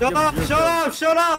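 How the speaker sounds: high, loud, angry yelling.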